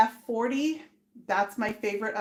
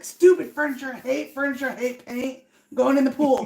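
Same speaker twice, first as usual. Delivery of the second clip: loud, mock gruff, fed-up, angry trucker voice; 3 semitones higher, 5 dB louder than usual. Acting out a hypothetical angry rant while painting in heat: angry trucker-like voice. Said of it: "Why do you sound like a trucker?".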